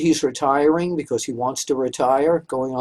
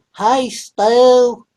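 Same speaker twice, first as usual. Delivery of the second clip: silly put-on Georgia-Alabama accent, high and loud; 8 semitones higher, 5 dB louder than usual. Recalling how fans used to greet someone, in a put-on Georgia-Alabama accent. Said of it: "put on that Georgia, Alabama accent".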